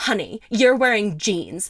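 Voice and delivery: mock short, annoyed, irritated snap. Retelling snapping at hikers on the trail: retelling snapping at someone. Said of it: "I turned around and I snapped at them".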